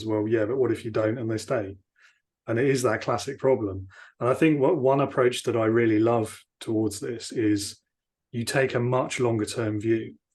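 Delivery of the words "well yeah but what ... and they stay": put-on, dry, flat deadpan. Retelling the CFO's answer to the CEO; retelling a deadpan reply. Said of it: "sort of deadpan responds".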